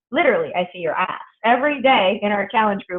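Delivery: ordinary delivery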